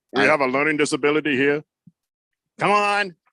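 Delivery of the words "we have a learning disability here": put-on deep booming voice. Quoting a movie line for others to guess: James Earl Jones voice. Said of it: "I never tried to do that voice before".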